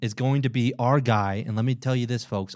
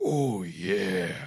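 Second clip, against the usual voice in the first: deep, beefed-up, macho put-on voice; 4 semitones lower, 4 dB quieter than usual. Correcting how the man sounded, the speaker repeats it in a more manly voice. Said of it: "it was more manly".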